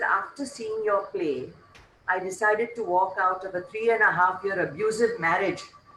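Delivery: plain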